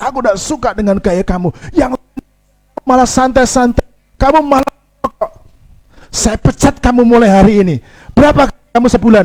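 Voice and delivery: angry voice.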